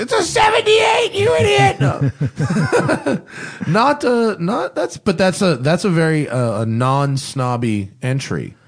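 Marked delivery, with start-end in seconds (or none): 0.0-1.8 very high-pitched, loud mock yell. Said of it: "Some Cadillac enthusiast is yelling".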